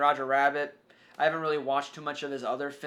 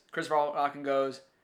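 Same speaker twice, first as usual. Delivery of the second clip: ordinary talk, nothing marked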